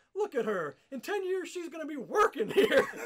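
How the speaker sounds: high, loud, ranting shout. Telling of his gimmick at a strip club, the speaker is retelling own yelling. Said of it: "I'm yelling at the people".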